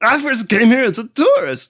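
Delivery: very high voice cracking and breaking upward. Retelling a scene with friends, quoting Sockhead in Sockhead's cracking high voice. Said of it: "his voice just cracks and breaks and gets all high".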